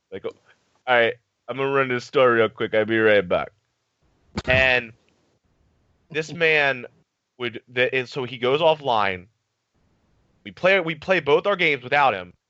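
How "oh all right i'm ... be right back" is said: put-on Jamaican accent. Retelling a teammate leaving to run to the store: imitating Papa Reds, Jamaican accent. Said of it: "he was this Jamaican guy".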